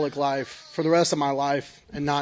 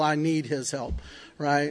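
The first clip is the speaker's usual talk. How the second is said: ordinary talk, nothing marked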